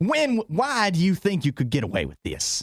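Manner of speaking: put-on, swooping, high-pitched Southern accent. Showing what to say to Jim when he misbehaves, in a Southern accent. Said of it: "he needs to hear a Southern accent".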